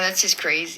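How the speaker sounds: usual speaking voice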